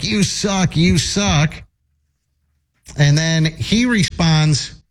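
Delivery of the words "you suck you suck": mock mild jeering heckler yell. Retelling a heckler taunting a baseball player who missed a catch, imitating a heckler yelling. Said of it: "she's just yelling at him".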